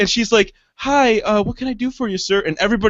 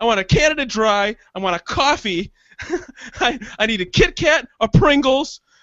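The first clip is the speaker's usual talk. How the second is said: mock furious, flipped-out rant, drawn out. Retelling flipping out at the hostess: retelling own furious outburst. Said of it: "And I fucking flipped out".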